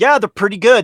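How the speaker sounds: mock dead-dry throwaway deadpan delivery.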